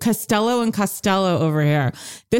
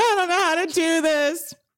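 sobbing, distraught, high, wailing scream-cry; 8 semitones higher than usual. Retell the moment before the waiter comes by, imitating Lisa Rinna scream-crying. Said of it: "like doing that scream cry".

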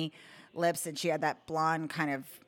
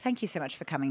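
put-on British woman's accent. Retelling a play date host thanking a child: imitating a British woman. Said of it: "this British woman, and I was just doing her voice back to her".

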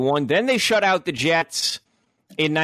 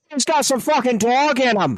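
put-on Irish accent, pitched up; 9 semitones higher than usual. Saying a line when asked to do it in an Irish accent. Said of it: "but in an Irish accent".

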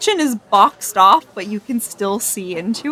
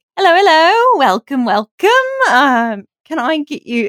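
put-on high, slow, drawn-out teenage girl voice; 6 semitones higher, 4 dB louder than usual. Game master voicing a teenage Aladrin girl greeting the table with menus: teenage elf girl voice. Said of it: "a teenage girl... Would come up to the table and just be like".

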